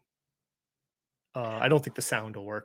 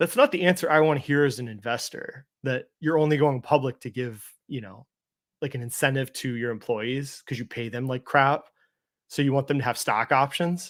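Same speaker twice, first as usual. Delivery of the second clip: ordinary delivery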